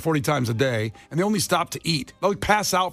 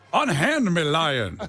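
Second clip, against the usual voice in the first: put-on Southern accent; 2 semitones higher than usual. Joking about Southern accents, the speaker delivers a line in Foghorn Leghorn Southern accent. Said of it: "I'm doing a Foghorn Leghorn like a Southern accent".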